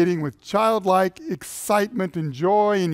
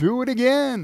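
put-on high-pitched, eager little kid voice; 5 semitones higher than usual. Describing playing with a little kid, imitating a child yelling. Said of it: "he's going to yell".

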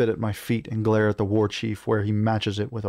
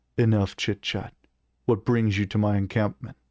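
plain

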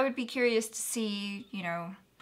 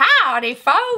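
very loud, higher, put-on Southern American accent; 8 semitones higher, 13 dB louder than usual. Teasing the other speaker for getting so excited, put-on American Southern accent. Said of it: "you became an American Southerner".

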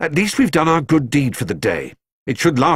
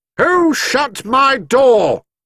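very high, bellowing angry roar, drawn out; 12 semitones higher, 4 dB louder than usual. The man locked out of his house strides round to the front, roaring. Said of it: "roared Mr. Curry".

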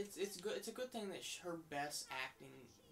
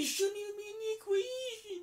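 shouted line, higher and louder; 12 dB louder than usual. Repeating a line yelled while arguing with a mom on screen: reenacting own shouted argument line. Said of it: "I'm just yelling".

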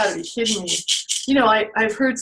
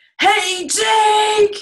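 very high, loud yell, one word stretched long; 12 semitones higher, 6 dB louder than usual. Counting to three, then yelling with viewers to wake the snake: yelling to wake a snake. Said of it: "So everybody yell".

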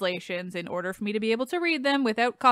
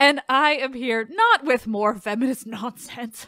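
heavily sarcastic, ironic tone, laid on thick; 2 semitones higher than usual. Podcast host introducing herself and her topic, very sarcastic. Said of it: "she said in very sarcastic tone".

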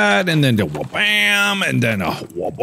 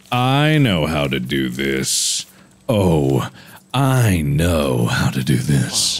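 odd, strange tone, pitched lower; 14 semitones lower than usual. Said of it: "Why are you saying it like that?".

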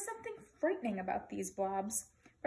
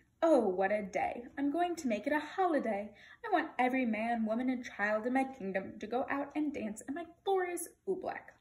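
usual speaking voice

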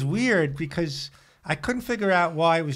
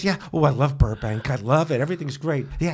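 put-on, on-top-of-the-world voice; 3 semitones lower than usual. Retelling working as an opening act without pay: Darren Carter impression. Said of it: "this is my Darren Carter impression".

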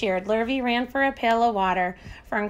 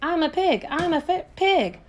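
very slow, high, stretched-out, drawn-out shout; 6 semitones higher than usual. Narrator reading Avery crawling on all fours into the crate, yelling. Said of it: "yelled Avery".

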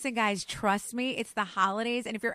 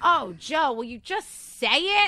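loud, fed-up, exasperated scream from the background; 4 semitones higher, 7 dB louder than usual. Retelling yelling from the background at someone flubbing lines, mock-screaming in exasperation. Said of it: "I'm in the background screaming like".

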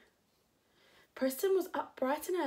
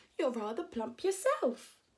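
plain reading voice

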